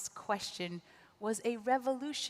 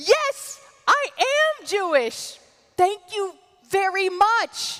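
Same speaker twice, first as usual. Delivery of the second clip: excited voice, higher and louder; 10 semitones higher, 14 dB louder than usual. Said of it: "I said excitedly".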